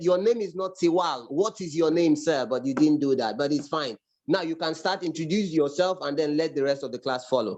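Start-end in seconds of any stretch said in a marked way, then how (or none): none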